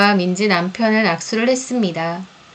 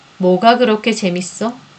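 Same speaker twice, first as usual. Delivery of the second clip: ordinary delivery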